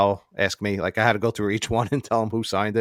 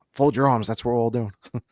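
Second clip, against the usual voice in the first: put-on whisper. Retelling words said while walking past him during a photo: imitating a whisper. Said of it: "The two words I whispered to him".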